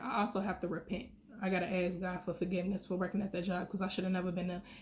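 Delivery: fast, passionate rush of words.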